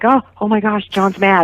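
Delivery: acted, mock-shocked tone. Speaker on the radio recounting her and Courtney's reaction to John; retelling a shocked reaction. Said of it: "we were all standing there in shock".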